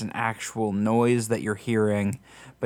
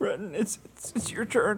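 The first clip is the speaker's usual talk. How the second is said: very high, weepy, tearful crying sob-talk; 10 semitones higher, 7 dB quieter than usual. Voicing a character who wakes another for the watch: crying voice. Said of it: "Why are you still crying?".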